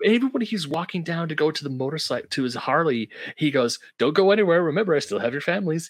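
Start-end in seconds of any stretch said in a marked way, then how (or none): 4.0-5.9 quick, casual, unbothered, offhand delivery. Retelling what a man says while walking to his Harley; imitating him saying it nonchalantly. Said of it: "He just says it so nonchalantly".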